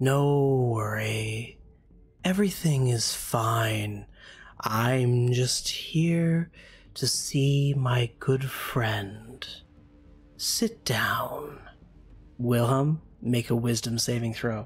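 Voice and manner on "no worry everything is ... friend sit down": slow, gentle, lulling, trance-like hypnotic voice. A storyteller voices a voice coming from a mist, speaking to Wilhelm softly. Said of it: "a voice emanate from it softly saying".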